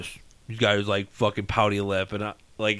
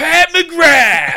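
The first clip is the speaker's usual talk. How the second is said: put-on scream, higher and louder; 11 dB louder than usual. Retelling how a kid pointed and called a name: imitating a kid screaming. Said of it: "screaming as loud as he can".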